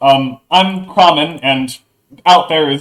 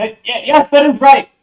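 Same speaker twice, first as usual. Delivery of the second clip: very high, thin, shrill, small piping voice; 11 semitones higher than usual. Retelling a voice answering back through a door: small shrill voice. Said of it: "like a small um like shrill voice uh respond".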